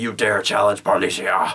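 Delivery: acted, put-on man's voice. Retelling a game, a woman character warning off bandits, in a put-on man voice. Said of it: "I just put on this man voice".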